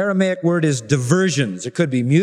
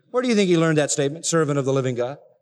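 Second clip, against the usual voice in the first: plain reading voice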